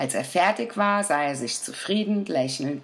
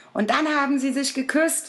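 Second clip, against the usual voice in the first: very high, breathless, out-of-breath cry; 11 semitones higher than usual. Narrator reads the little Day finishing his report to his father, breathless exclamation. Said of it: "rief er am Schluss seines Berichtes ganz atemlos".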